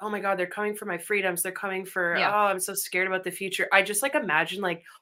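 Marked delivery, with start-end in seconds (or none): 0.0-3.7 acted overwhelmed panic, fretting. Speaker acting out their own moments of feeling overwhelmed: mock overwhelmed panic. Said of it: "if I get overwhelmed for a second and I'm like".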